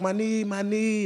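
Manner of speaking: play-acted tearful crying, high and slow. Retelling how an injured player cried on the bench, imitating someone crying in pain. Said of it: "she's crying".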